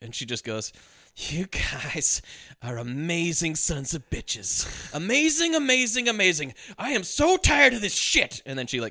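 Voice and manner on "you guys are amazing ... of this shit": jittery, slow, drawn-out delivery. Retelling a movie scene after a fake agent is unmasked: jittery Sandra Bullock imitation.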